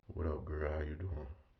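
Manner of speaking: deep, soft voice dropped a low octave. Speaker demonstrates how he greets a girl, in a dropped low-octave voice. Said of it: "That that low octave".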